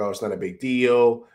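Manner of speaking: normal talking voice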